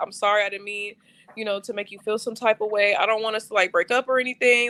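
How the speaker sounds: high, tearful crying voice. Retelling an apology made in the car: imitating own crying.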